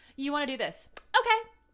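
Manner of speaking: shrill, very loud, high-pitched, combative tone. Retelling own fights, using the tone from the scene: imitating Mary's tone. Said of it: "I use that tone all the time now".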